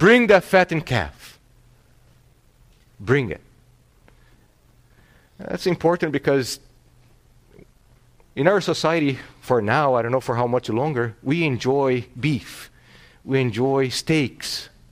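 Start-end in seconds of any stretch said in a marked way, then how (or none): 0.0-1.4 high, loud, joyful yell. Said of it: "And he yells".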